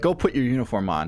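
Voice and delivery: ordinary talk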